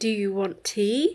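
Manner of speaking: sharp, exaggerated rise at the end on tea. Showing how a statement becomes a question, exaggerated rise at the end on tea. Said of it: "It goes up at the end. I mean, that's exaggerated".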